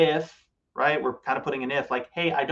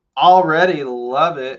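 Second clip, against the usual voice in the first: very loud, mocking sarcasm; 11 dB louder than usual. Reacting to a two-bedroom home under nine hundred square feet: sarcastic. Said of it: "that's sarcasm".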